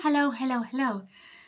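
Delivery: super out of breath, panting from exertion. Opening a vlog and greeting viewers after a huge delivery, super out of breath. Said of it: "I'm super out of breath".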